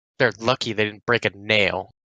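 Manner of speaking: low half-whisper under the breath. Narrating as two orcs walk around the corner, Merrick half-whispering to himself. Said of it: "Merrick whispers to himself".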